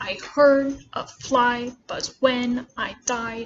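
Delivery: hammered da-DUM iambic stress on heard, fly, when, died. Reading a poem line with a very emphasized iambic rhythm: heavily marked iambic rhythm. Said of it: "if I was reading it with a very emphasized iambic rhythm".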